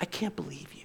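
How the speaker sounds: put-on accusing tone of voice. Voicing Satan turning on Judas after the betrayal: Satan's accusing voice. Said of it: "You ever heard that voice?".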